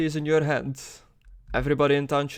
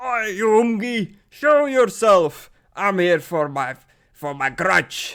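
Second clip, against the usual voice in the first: put-on drunken shouting, higher and louder; 5 semitones higher, 5 dB louder than usual. A dwarf outside the bar calls out a challenge, drunken shouting. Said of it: "drunkenly shouting outside".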